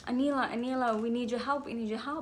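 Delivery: mock-frightened, urgent pleading tone. Recounting a dream where a lady runs up begging for help, imitating a frightened plea. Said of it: "she's like so frightened".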